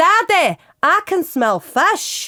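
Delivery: very drawn-out, slow, high put-on Scottish accent. Talking about accents, the speaker shows the one line they can do: Scottish accent. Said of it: "I can say one thing with a Scottish accent".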